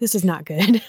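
mock, put-on irritated, pissed-off tone. Retelling how the bartender reacted to an order, imitating someone pissed off. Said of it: "is instantly pissed 'cause she's like".

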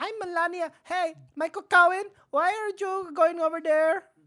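put-on very high-pitched voice with a Mexican accent. Doing a comic impression, aware it drifts Mexican: Melania impression. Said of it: "That's my Melania".

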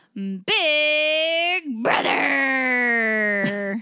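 deep, raspy voice. Redoing the show-title intro after being asked to do it again: deep raspy voice. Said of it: "Had to get a little more deep raspiness".

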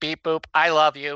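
machine-like robot delivery. Recapping a Legion-era comic story, voicing the Supergirl robot: Supergirl robot voice. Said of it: "the Supergirl robot is like".

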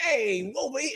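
near-Italian put-on accent. Describing a man's awkward attempt at a blown kiss, almost an Italian accent. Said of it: "almost like an Italian".

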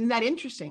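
plain

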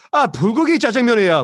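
very angry burst of Korean. Retelling an audition where Korean menu items replaced the lines: retelling an angry line. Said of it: "but I said it very angrily".

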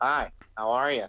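slow, dull, boring, tamed-down delivery. Acting out a wrestler changed after a knockout: acting out a boring person. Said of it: "he's friggin' changed and he's all boring".

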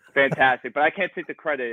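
ordinary delivery

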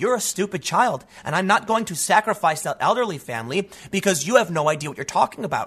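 plain

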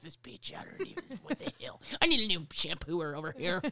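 mock angry, acting pissed off. Acting out getting sprayed in the ear while having hair washed: acting pissed off. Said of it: "I would be pissed".

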